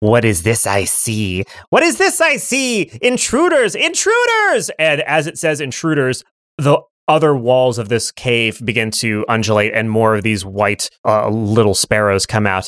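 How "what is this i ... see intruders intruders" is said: put-on very high, sing-song, swooping childlike creature voice. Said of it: "And it goes".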